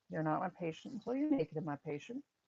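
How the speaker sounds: ordinary delivery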